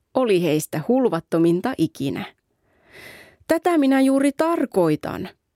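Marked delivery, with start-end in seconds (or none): 3.4-5.3 sudden cried-out exclamation, pitched up. Nuppunapa, as the friends laugh at the dream, exclaiming.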